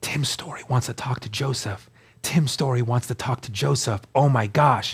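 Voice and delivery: soft, hushed, secretive whispering. Retelling what family said behind their back: imitating family whispering.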